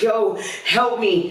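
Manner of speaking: acted-out desperate crying, high and tearful. Retelling calling your friend for help, retelling a crying plea. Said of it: "I'm crying and I'm throwing up".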